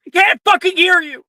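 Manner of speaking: shrill, very high-pitched shouting. Voicing a character who yells back during a fight: character yelling back. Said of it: "She's yelling back".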